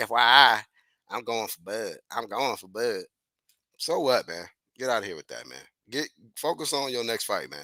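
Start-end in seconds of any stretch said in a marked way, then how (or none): 0.0-3.0 slow, steady, deliberate declaring tone. Mocking a fighter's comment about Bud Crawford: imitating Errol Spence. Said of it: "I'm trying to say how he would say it".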